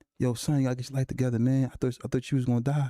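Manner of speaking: put-on tearful, crying voice. Retelling how the dad came up crying after a shooting: imitating dad crying. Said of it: "crying to me, like".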